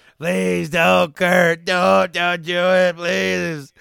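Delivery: shrill, very loud, high, drawn-out desperate begging. Retelling a wrestling scene, imitating Steve Austin begging not to be thrown: imitating Austin begging. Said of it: "begging him".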